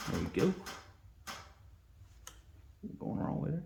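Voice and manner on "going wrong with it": softer, unvoiced whisper. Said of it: "I'm sorry if I'm whispering".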